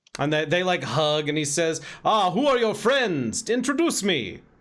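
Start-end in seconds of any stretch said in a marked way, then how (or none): 2.1-4.4 courtly, welcoming vampire-like voice. Voicing a character in a game scene: vampire-like voice. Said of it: "That sounds like a vampire".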